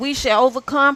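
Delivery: ordinary talk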